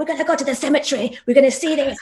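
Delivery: put-on lively Scottish accent. Speaker recalls their history teacher at school, imitating Mr. Moy's lively Scottish voice. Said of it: "he's like a very vivacious Scottish guy".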